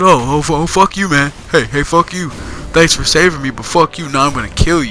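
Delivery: angry, upset, stammering, stumbling outburst. Voicing a game boss who thanks then threatens the player: imitating an upset boss. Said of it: "He was all upset".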